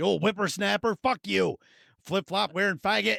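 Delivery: mock angry old man voice, cranky and grumbling. Retelling what an old man at a gas station said: imitating an old boomer. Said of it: "the most boomer thing I've heard".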